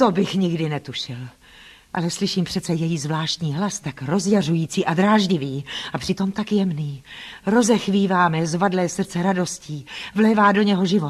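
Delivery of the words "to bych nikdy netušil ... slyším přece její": ordinary delivery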